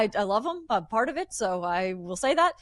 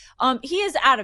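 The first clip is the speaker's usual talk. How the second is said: ordinary talk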